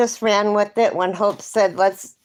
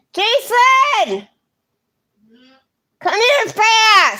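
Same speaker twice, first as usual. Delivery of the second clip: high shout with the final word stretched long; 14 semitones higher, 5 dB louder than usual. Spotting a spider and calling someone over fast: yelling. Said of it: "I didn't mean to yell in your guys' ears".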